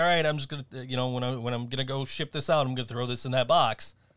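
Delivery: ordinary talk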